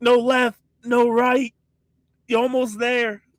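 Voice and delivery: put-on very high, loud shouting. Character with a lost head shouting directions at his own body, shouting. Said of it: "I'm shouting at my body like".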